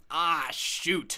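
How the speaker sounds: blurted outcry of dismay. Teaching english slang, demonstrating reacting to keys locked in the car, yelling. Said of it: "I might yell".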